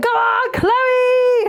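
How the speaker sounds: mock, very high, screaming fangirl shriek. Retelling cheering a contestant from the front row, retelling a scream. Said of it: "I was literally screaming".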